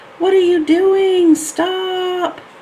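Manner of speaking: high, loud panicked screaming.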